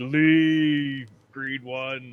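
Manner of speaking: loud booming, echoing voice. A player speaking as their character at the table, in a booming echoing voice. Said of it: "make my voice booming when I say that".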